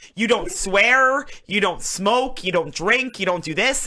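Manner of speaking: mimicked strict voice. Retelling a strict mom's rules: imitating a strict mom. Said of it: "she was very nineteen fifties".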